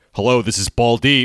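mock proud man's voice, acted. Retelling a phone call, the speaker imitates a man answering, imitating a proud man. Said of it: "Like he was so proud of it".

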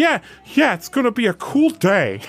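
squeaky, sing-song, high-pitched bad voice, drawn out. Try another voice for Book after rejecting a bad one, in a Peter Griffin-like voice. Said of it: "Is that Peter Griffin?".

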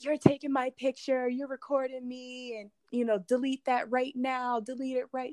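furious, angry, cursing rant in a put-on yell. Recounting a woman screaming at the speaker for recording her, imitating an angry yell. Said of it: "She's cursing and going absolutely apeshit".

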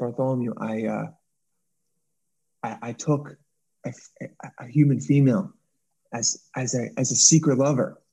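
voiced, slow, halting, drawn-out stage whisper. Acting out an alien confessing to a friend: half-whispering. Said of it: "He whispers".

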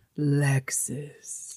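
breathy, velvety, smooth, resonant voice. Imitating a Lexus commercial: Kathleen Turner voice. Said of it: "resonance that's like velvet".

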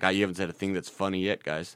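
bone-dry deadpan monotone, very low and quiet. Podcast host imitating older listeners reacting to the podcast, imitating a deadpan listener. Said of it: "just deadpan like".

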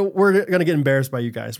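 ordinary talk

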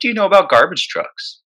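high, easy, casual tone. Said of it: "Just as casually".

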